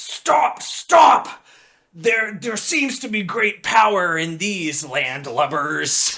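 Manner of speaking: rough, gruff, rude-sounding crowd voice. Telling the scene, a voice emerges from the crowd and interrupts: gruff, borderline offensive voice. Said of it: "this borderline offensive and gruff voice emerges from the crowd".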